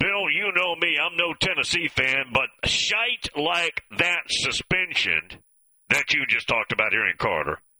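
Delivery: ordinary delivery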